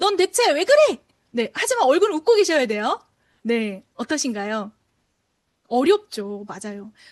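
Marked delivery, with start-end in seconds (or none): 0.0-1.0 loud, high-pitched, really irritated angry voice. Speaker demonstrating a voice exercise for listeners to copy, irritated, angry voice. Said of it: "화나고 짜증난 목소리".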